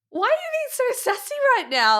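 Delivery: high, loud outburst full of disbelief.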